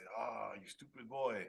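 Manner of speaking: put-on Hungarian accent. Retelling what a very old hungarian man told him, imitating a hungarian accent. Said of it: "He was Hungarian".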